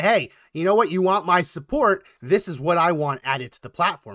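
plain

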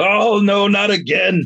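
very high-pitched, very slow, drawn-out panicked wail. In a tabletop game, a player voices Sam hanging upside down; Sam yelling. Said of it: "he just yelled".

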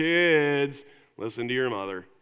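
put-on very disinterested dad voice, drawn-out Kids. Parent quoting his kids' favorite line, mock-disinterested Bob voice. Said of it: "Bob says in this very disinterested voice".

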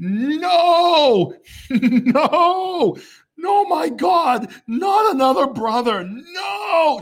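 put-on shrill, very high, top-of-lungs child's scream. Retelling how she reacted in the room; imitating her screaming at the top of her lungs. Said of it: "starts screaming at the top of her lungs".

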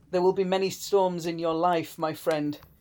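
normal talking voice

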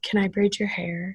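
put-on whisper. Retelling a classmate's question during class reading: imitating a whisper. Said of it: "John whispers in my ear".

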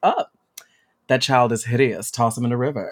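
mock, put-on deadpan delivery. Recalling a film scene, voice the parents' decision in a mock-deadpan tone. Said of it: "the like deadpan like decision".

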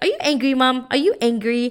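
put-on sweet, cute little toddler voice. A mother quoting her three-year-old son when she gets upset: imitating his cute little voice. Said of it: "he has like this cute little voice".

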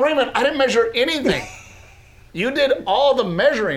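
indignant, high, fast delivery.

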